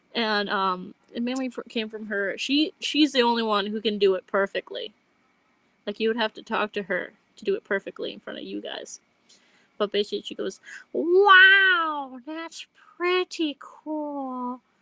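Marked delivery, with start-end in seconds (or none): 10.9-14.5 put-on weird childlike voice, high and raised, very slow. Imitating a roommate's catchphrase: really weird child voice. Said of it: "this really weird child voice".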